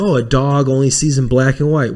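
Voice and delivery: normal talking voice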